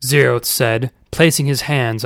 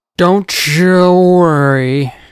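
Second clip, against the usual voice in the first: put-on loud, slurred, stumbling-drunk words, worried and drawn out; 6 semitones higher, 6 dB louder than usual. Narrator reading a story, voicing Uncle Shameless as he stumbles forward, slurring. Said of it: "Uncle Shameless slurred".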